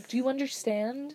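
quiet, low-key, menacing tone. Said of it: "just the way she said it was like".

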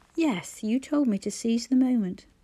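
plain reading voice

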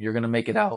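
voice cracking. Encouraging viewers through hard times, voice cracking. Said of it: "that voice crack was horrible".

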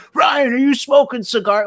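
very high-pitched yelling. Recounting how a friend's dad walked up the street yelling at him, retelling a dad's yell. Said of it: "he's yelling at him".

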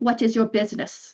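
tough-sounding voice. Game master voicing a presence entering a player's mind, tough voice. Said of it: "It's a tough voice".

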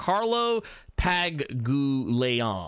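slow, careful, deliberately paced pronunciation. Saying a name carefully so as not to get it wrong: said slowly. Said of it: "I had to say it slowly".

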